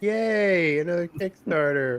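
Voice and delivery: sarcasm laid on thick, dripping, drawn-out "yay". Retelling the wife's reaction to another kickstarter in the mail: imitating dripping sarcasm. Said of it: "dripping with sarcasm".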